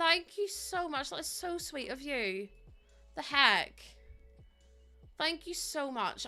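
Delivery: choked up, close to tears. Thanking viewers for upgrading their subscriptions: emotional, close to tears. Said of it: "the way everyone's upgrading their sub is making me so emotional".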